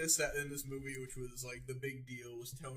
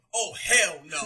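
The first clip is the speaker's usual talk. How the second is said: very loud, over-the-top, exaggerated slangy voice; 3 semitones higher, 15 dB louder than usual.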